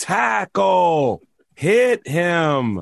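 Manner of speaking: light, put-on yelling like a sideline coach. Retelling coaching nine-year-olds at football: imitating yelling at kids. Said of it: "just yelling".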